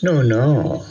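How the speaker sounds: soft, pitying manner. Gopal answers Sunil's incredulous question; pitying. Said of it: "said Gopal pityingly".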